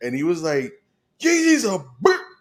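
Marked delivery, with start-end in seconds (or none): 1.2-2.2 imitated shout, higher and louder. Retelling a random man on a crowded train: imitating a stranger yelling. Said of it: "he just started yelling out of the nowhere".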